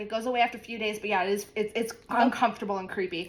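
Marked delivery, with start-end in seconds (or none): none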